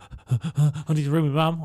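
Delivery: put-on, imitated panicked way of speaking. Retelling what a stabbed man said while panicking: imitating a panicking person. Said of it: "he was literally panicking".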